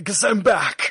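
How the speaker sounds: weird, loud, slow breathy delivery. Imitating the weird breathy way a man says a line: weird breathy voice. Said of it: "It's this weird breathy way he says that line".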